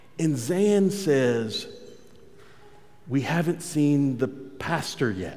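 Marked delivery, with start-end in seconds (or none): 3.1-5.4 soft, mock gravely worried, deeply concerned tone. Speaker retells a remark made during a long church service, mock-concerned. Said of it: "He says it with a great amount of concern".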